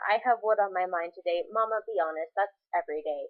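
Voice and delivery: ordinary talk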